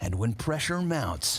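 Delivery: dramatic trailer narrator voice.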